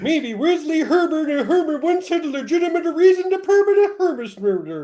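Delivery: very high babbling gibberish that sounds Swedish. Reading aloud a text another participant wrote: Swedish Chef voice. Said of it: "put normal English into the Swedish Chef voice".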